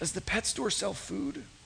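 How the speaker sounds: acted feeble, faint, whispered last-breath voice. Retelling a parrot's last words right before it died, imitating a weak dying voice. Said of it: "in a real weak voice".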